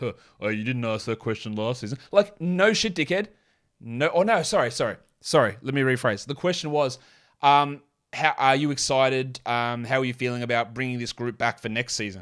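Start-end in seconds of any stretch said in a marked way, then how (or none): 0.0-2.0 low, smug, dismissive tone. Retelling a coach answering a reporter at a press conference: imitating Jason Kidd smugly.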